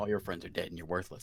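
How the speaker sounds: soft, muttered under the breath. In character at a locked door with no response, muttered under the breath. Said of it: "I mutter under my breath".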